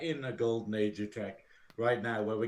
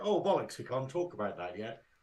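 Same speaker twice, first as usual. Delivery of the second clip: normal talking voice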